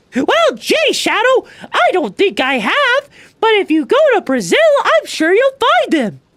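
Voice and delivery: pitch pushed very high and swooping around. Showing off a three-octave voice by playing Mickey greeting Shadow: Mickey Mouse voice.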